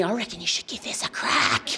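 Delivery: soft, coaxing demon whisper. Telling of her dopamine demon whispering to her, retelling a whisper. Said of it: "it whispered to me".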